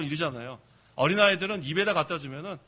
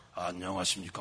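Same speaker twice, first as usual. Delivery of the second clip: deep, thick, weighty put-on preacher's voice; 11 semitones lower, 7 dB quieter than usual. Imitating how religious figures of that era spoke to keep authority, put-on thick voice. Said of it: "뭐 이렇게 좀 두껍게".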